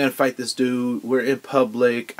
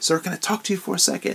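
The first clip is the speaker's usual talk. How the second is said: high, kindly, intimate stage whisper; 7 semitones higher than usual. Retelling approaching a man in a store: imitating own whisper. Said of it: "I whispered".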